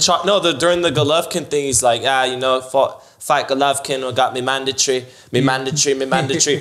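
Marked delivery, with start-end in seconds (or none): 2.0-6.6 speaking in a put-on English accent. Retelling what a boxer said about a mandatory fight: Kell Brook impression, English accent. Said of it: "I learned it from your boy Kell Brook".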